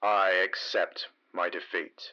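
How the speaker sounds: low, flat, through gritted teeth. Speaking to the Wolfstar Commander, low and flat through gritted teeth. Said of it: "low and flat, as if through gritted teeth".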